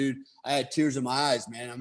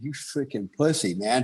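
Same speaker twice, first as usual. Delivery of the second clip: put-on tearful, crying voice. Retelling standing alone in the woods crying: imitating own past crying. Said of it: "self crying, going".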